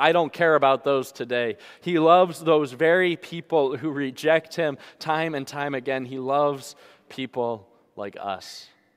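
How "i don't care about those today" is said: dismissive, sarcastic brush-off tone. The speaker acts out sinners dismissing god's commandments, imitating a sarcastic tone. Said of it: "in that sarcastic tone say".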